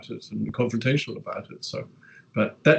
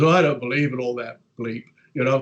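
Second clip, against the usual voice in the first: acted-out annoyed, worked-up, angry man. Retelling a man's dismissive reply at a social function: imitating an angry man. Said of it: "why do you have to be so angry about it".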